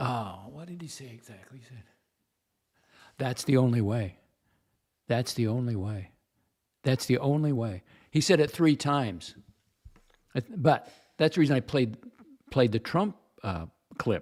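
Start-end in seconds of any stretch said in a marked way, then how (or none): 3.2-7.8 mock-somber, imitated solemn tone. Quoting a man who repeated his words three times, imitating a somber tone. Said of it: "he got very somber".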